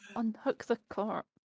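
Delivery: whispering. Player trying to stay low-key in the game, whispering.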